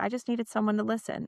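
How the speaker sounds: ordinary talk, nothing marked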